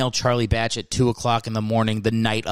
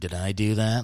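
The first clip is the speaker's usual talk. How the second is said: sexy, seductive, come-on delivery; 2 semitones lower, 4 dB quieter than usual. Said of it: "all sexy".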